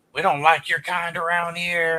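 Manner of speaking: loud mocking taunt. Describing a man harassing someone at pool, the speaker is retelling a loud taunt. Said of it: "he's making comments real loud".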